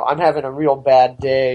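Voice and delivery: put-on flat monotone. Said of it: "a monotone".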